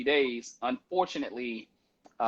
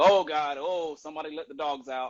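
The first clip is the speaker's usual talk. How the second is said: put-on, fake disgusted exclamation; 3 semitones higher than usual. Retelling a prank video after a fake fart: imitating a prankster faking disgust. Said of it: "he farts. He's like".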